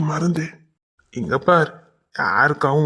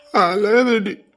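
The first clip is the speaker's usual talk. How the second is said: high, tearful crying voice with tears breaking through. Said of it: "நீங்க அழாதீங்க".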